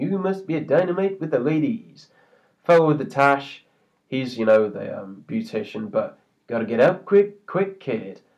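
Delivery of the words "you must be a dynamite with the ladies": put-on sarcasm, higher and quieter. Recalling a sarcastic fellow's line, imitating his sarcasm. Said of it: "sarcastic Star Trek fan".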